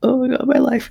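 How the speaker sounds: put-on tearful sobbing wail, pitched very high. Retelling a woman crying on a train: imitating someone sobbing. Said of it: "sobbing on the train".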